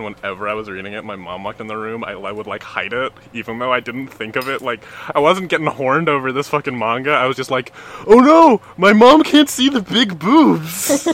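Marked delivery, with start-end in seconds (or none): 8.1-11.1 drawn-out, squeaky, loud delivery. Acting out your past self when your mom walked in while you read manga, sounding like Kermit the Frog. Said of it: "you sound like Kermit the Frog".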